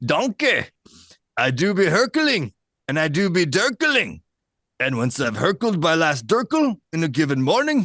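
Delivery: ogre voice with Scottish accent. Speaker realizes the quote is Shrek's and performs it: Shrek voice. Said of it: "I guess it's Shrek. I can do Shrek".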